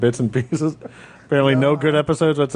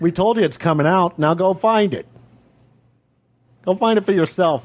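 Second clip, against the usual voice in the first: higher-pitched telling-off tone; 5 semitones higher than usual. Podcast host with no guests today, yelling at the audience. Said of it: "I'm yelling at the audience".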